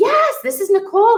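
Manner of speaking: big, boisterous, showing-off announcing voice, very high. Retelling how the ex-husband introduced her in the store: imitating someone being boisterous. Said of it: "being really boisterous".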